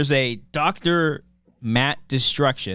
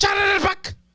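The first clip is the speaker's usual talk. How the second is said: very high-pitched monster-like creature cry. Doing a Pokemon impression in a group game: Arbok impression. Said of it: "That's an Arbok".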